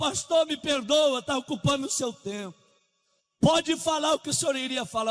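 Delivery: acted-out weeping, tearful crying voice. A pastor retells what a man said to him, imitating a man crying. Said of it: "E ele começou a chorar".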